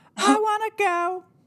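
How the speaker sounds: very high, small ghost voice. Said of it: "what this ghost says".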